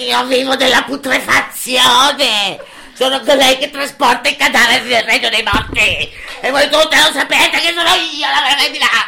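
harsh, grating, unpleasant croaking voice. The crow breaks into the gathered females' idyll; croaking, unpleasant voice. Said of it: "Una voce gracchiante e sgradevole".

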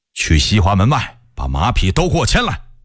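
plain reading voice

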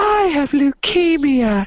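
put-on very high, piping small child's voice. Acting out a made-up exchange, the speaker voices a child offered candy, imitating a small child. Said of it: "he's like hi i'm a child".

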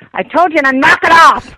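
full-on, loud, high-pitched yelling. Telling a caller to drop it, yelling. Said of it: "you're yelling".

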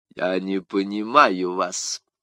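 arrogant, haughty, low and very slow delivery. The king answers de Tréville's cold reply in a haughty tone. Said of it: "надменным тоном произнес король".

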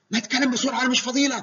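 high, loud, impatient nagging, scolding tone.

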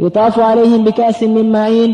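ordinary talk, nothing marked

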